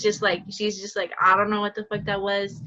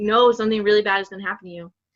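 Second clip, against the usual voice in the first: mock crying, louder; 3 dB louder than usual. Retelling a cousin's warning to someone leaving for a party, imitating a crying cousin. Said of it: "my cousin was like crying".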